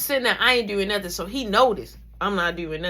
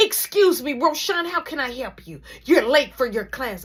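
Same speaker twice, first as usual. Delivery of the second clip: angry voice, higher pitch; 4 semitones higher than usual. Retelling what the teacher said on opening the door: imitating an angry teacher. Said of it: "you could just see the anger".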